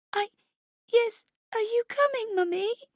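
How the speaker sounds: very high, quavering, trembling, tearful voice. Narrator reading a daughter answering her mother on the phone: trembling voice. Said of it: "Her voice is trembling".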